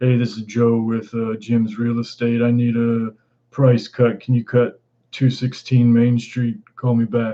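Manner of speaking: forced, deepened put-on deep voice. Retelling crank voicemails from callers, imitating a faked deep voice. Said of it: "they'll try and deepen their voice".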